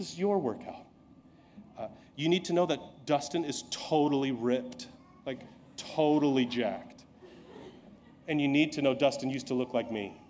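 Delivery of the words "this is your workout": very calm, soft, easy, gentle, reassuring voice. Retelling what the trainer said after he asked to stop: imitating Dustin speaking calmly and gently. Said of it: "Very s-, calmly, very gently, he said".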